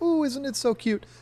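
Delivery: very high, gushing, cooing voice.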